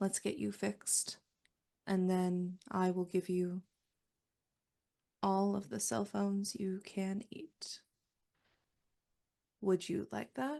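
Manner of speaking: low, soft, unthreatening voice. In a game, a player's character makes an offer, in a low voice. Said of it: "and in a low voice".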